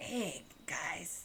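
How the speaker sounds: very soft, breathy character voice, barely above whisper. Doing a classic Peter Lorre impression. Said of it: "Classic, classic Peter Lorre, um, impression".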